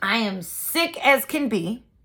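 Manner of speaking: dramatic, slow, drawn-out sickly lament.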